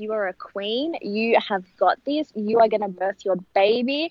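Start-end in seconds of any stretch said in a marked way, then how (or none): none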